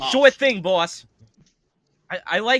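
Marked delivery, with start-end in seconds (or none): 0.1-1.1 put-on Boston mobster accent, higher and louder. Repeating what the skeletons said to the boss: Boston mobster accent. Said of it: "having a Boston accent".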